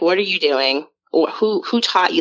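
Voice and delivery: put-on angry, scolding tone. Retelling how a mother scolded a child over a Ouija board: imitating an angry mother. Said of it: "she was pissed".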